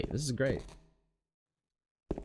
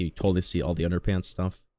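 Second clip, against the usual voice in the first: ordinary delivery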